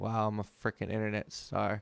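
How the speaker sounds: plain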